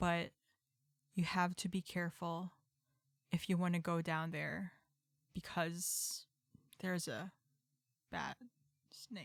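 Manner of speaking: hushed whisper. Speaking in character so only one listener can hear: whispering. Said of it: "I'm going to start whispering that part".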